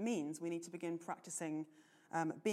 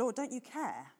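put-on cheeky, sassy complaining, raised and pitched-up; 7 semitones higher, 5 dB louder than usual. Retelling Martha protesting to Jesus: imitating a sassy protest. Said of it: "protesting to Jesus in actually quite a sassy way".

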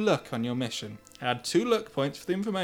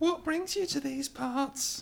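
put-on very high-pitched elderly woman voice; 11 semitones higher, 4 dB quieter than usual. Asked to do a woman's voice, the speaker puts on an old woman voice. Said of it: "She sounds old".

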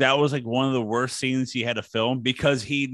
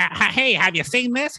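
strange, weird, goofy, pitched-up comic voice; 8 semitones higher than usual. Performing a line after being asked for a weird Jay Leno voice. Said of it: "in a weird Jay Leno voice".

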